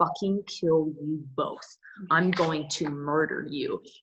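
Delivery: acted-out, mock murderous rage. An actor describing a scene from the script, acting out murderous rage. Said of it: "to I'm gonna".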